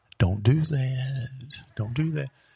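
put-on whisper. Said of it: "He's whispering".

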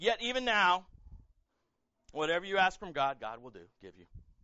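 play-acted, very loud, pointed sarcasm. Retelling Martha's words to Jesus after her brother died: imitating sarcastic Martha. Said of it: "she gets a little sarcastic".

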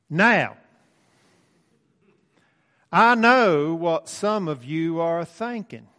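put-on backwoods Arkansas accent. Retelling a preacher's sermon introduction: imitating David Miller's backwoods Arkansas accent. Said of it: "he talks like this".

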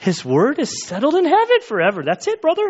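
put-on very high, swooping Spanish accent slipping into Irish lilt. Reading a verse aloud, the speaker tries imitating Alberto's accent.

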